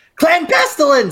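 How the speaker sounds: very high, yelled creature voice. During a game, yelling a battle cry in yelled Skaven impression. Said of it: "I'm going to yell out in my best Skaven impression".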